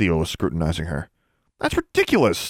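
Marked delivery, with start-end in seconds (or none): 1.6-2.5 stuttering, stammering, pitched very high. Thiel questions Alexandra about student records; she denies it, stammering. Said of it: "Alexandra stammered".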